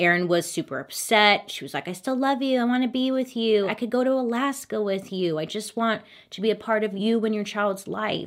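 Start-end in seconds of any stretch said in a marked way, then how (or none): 1.9-8.3 mock begging tone, desperate and much higher. Retelling how a woman pleaded with her partner, imitating someone begging. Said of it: "begging him to stay".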